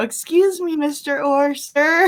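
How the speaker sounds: put-on voice sounding like a little kid. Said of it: "just like a little kid".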